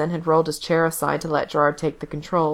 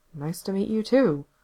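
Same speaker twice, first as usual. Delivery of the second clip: mumbled under the breath; 3 semitones higher than usual. After a man hands him headphones and leaves the room: mumbled under his breath. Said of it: "Gerard mumbled under his breath".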